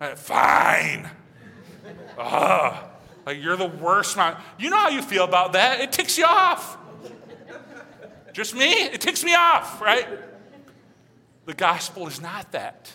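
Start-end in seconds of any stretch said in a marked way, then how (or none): 0.2-4.4 put-on grudging, put-upon child voice. Describing how children respond to parents: imitating a begrudging child. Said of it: "when your kids and grandkids do that".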